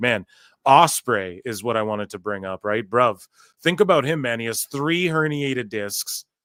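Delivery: ordinary delivery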